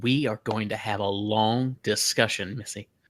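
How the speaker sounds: soft, muttered aside under the breath. Speaking in character after a kill: muttering under breath. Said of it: "under my breath, I'll just say".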